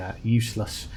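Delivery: normal talking voice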